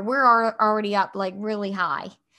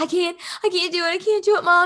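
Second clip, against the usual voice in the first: mock frantic, high, panicked, freaked-out voice; 9 semitones higher than usual. A mother retells her son's meltdown, imitating her son freaking out. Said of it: "And he's freaking".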